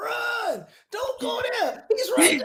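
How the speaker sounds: high-pitched, loud yelling.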